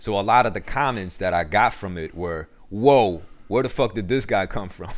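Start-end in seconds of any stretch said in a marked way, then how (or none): none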